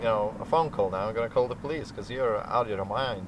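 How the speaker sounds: plain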